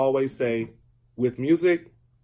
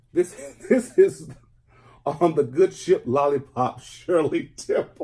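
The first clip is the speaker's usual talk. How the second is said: speaking through laughter, slower pace; 3 semitones higher than usual. Showing a thrift-store record to listeners, speaking while laughing. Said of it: "I'm sorry, I'm laughing".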